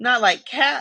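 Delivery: shrill, high-pitched, impassioned cry. Reading a story, the mouse cries out to Alice in a shrill, passionate voice. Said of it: "cried the mouse in a shrill, passionate voice".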